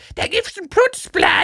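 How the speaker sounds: shrill, nagging, insistent tone.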